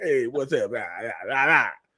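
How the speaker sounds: put-on low, easy, old-school jive slang delivery. Retelling how a man tried to seem like one of the boys, imitating a jive-talk greeting. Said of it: "try to get old jive and stuff".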